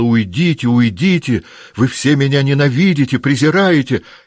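shrill, loud yelled outburst. Turning on the woman who keeps talking to her, shouting. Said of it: "Наташа закричала".

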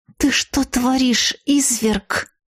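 hissing angrily, in fury. The narrator turns on a young man, hissing angrily. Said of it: "прошипела я".

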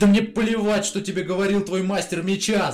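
very high-pitched, loud yelling outburst. The narrator cuts her off mid-sentence, yelling. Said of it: "заорал я".

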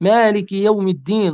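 ordinary talk

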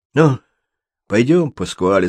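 ordinary delivery

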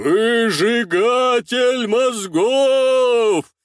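disguised menacing shout. The narrator swings the hand holding Kesha and shouts; distorted, mysterious, menacing shout. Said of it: "кричу, искажая свой голос, стараясь придать таинственность и грозность".

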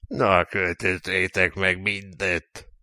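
unenthusiastic, indifferent, bored, flat monotone. A narrator reads the captain's order, said in a bored way. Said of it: "mondta unottan a kapitány".

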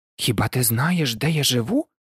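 said in surprise. Ludvik XIV, told by Maximilian which path to run, asks in surprise. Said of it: "здивувався Людвік XIV".

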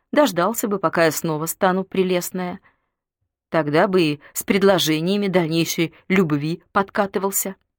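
ordinary delivery, nothing marked

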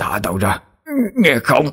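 croaking, barely audible. A man in growing pain, unable to cry for help, speaks: hoarse dying whisper. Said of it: "thều thào như một người sắp chết".

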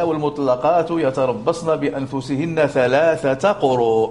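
ordinary talk, nothing marked

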